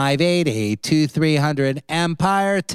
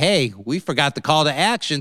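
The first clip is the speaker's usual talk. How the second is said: normal talking voice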